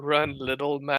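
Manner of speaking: soft half-whisper, close to the mic. Playing Hakon, who speaks to the Huskarl standing against him: half-whispering. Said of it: "Hakon whispers to the Huskarl".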